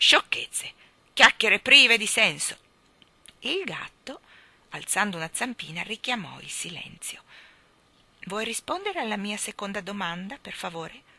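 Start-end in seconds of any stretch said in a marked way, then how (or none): 0.0-2.6 indignant, loud, angry huffing tone. Reading the king replying to the cat, huffing angrily. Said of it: "Il re sbuffò rabbiosamente".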